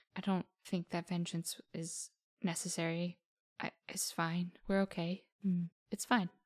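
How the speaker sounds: quietly spoken, soft, held-back delivery. Jasu answers an apology without looking at the speaker, quietly. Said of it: "she says quietly".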